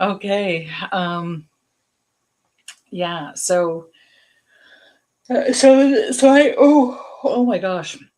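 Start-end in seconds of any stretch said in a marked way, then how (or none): 3.3-8.0 words stretched very slowly by a yawn. On a livestream, the speaker yawns mid-sentence. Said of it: "Sorry for yawning".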